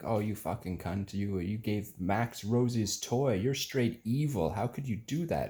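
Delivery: furious, high-pitched ranting tirade. Retelling a brother's angry text message: imitating someone angry. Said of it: "that kind of mad at me".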